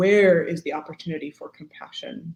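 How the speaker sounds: usual speaking voice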